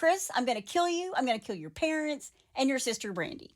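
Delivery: put-on yelling. Retelling how she threatened Chris's whole family, imitating her yelling. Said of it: "She's yelling".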